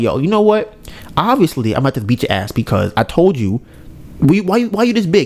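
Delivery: ordinary delivery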